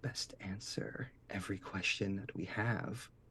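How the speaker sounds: very soft, menacing whisper.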